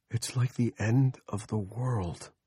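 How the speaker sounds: awed, wondering, hushed awestruck murmur. Watching the day's strange end beside a companion, a character speaks in a low, awestruck voice. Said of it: "Andy spoke in a low, awestruck voice".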